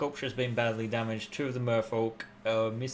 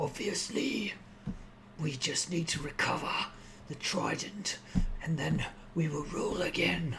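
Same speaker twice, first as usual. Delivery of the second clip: gruff, hushed man's voice without gravel; 4 semitones higher, 5 dB quieter than usual. A game narrator voices a man heard arguing nearby; gruff male voice. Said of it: "a male gruff voice say".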